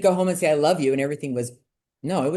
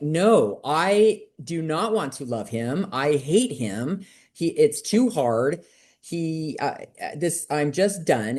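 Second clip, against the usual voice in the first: ordinary delivery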